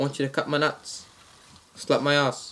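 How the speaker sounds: put-on Australian accent on every word. Retelling a prank call to a man named Bob; put-on Australian accent. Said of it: "same Australian accent".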